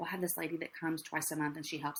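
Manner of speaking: soft, secretive, embarrassed half-whisper. Acting out own past replies when people ask, half-whispering. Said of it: "I'm like kind of whispering".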